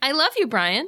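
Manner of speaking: phony, insincere, put-on affectionate tone. Answering a remark about sounding like an AI: put-on fake affection.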